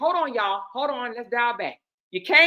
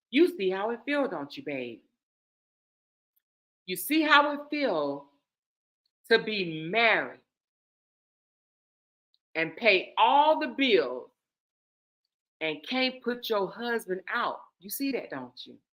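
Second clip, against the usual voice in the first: play-acted calm, soft, easygoing, pleasant voice; 4 semitones lower, 5 dB quieter than usual. Retelling what a husband calmly said to his wife: imitating a calm, nice tone. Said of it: "calmly, with his nice tone voice".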